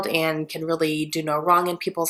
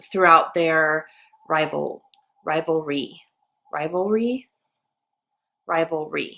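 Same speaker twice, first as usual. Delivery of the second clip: very slow, careful, drawn out syllable by syllable. Speaker repeats a word they find hard to say: saying it very slowly. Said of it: "I have to say that so slow".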